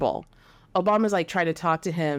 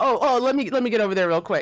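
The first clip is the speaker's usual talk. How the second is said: scared, fearful tone; 3 semitones higher, 3 dB louder than usual. Retelling LeBron's reply after he turned around terrified: imitating a terrified LeBron. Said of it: "he looks terrified".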